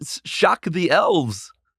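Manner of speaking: very slow, sing-song delivery. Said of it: "Christopher Walken".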